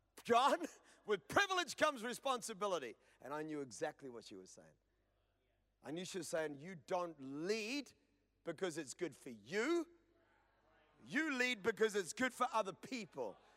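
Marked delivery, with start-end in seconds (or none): none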